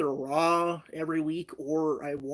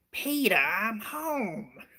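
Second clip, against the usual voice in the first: pitched-up, wide-swinging cartoon-mom voice; 5 semitones higher than usual. Responding to a chat request, doing a cool Lois impression. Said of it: "do a cool Lois impression".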